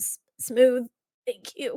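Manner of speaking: sputtering, coughing voice. Voicing a character handing back a flask after a bad swig: sputtering after cheap vodka. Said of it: "he kinda sputters".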